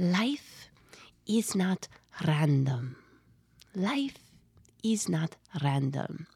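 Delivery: put-on sweet, gentle German accent. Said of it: "this sweet German voice".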